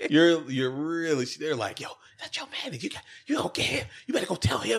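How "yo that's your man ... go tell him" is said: put-on loud whisper, much higher pitched. Describing people who think they're being quiet, mimicking loud whispering. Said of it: "but they really sound like this".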